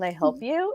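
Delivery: mock silky, very smooth, easy, unruffled tone. Retelling how a stranger in a smoky apartment answered, imitating a smooth reply. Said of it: "very smoothly".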